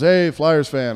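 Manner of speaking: put-on hint of Slovak accent in English. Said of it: "with a hint of Slovak".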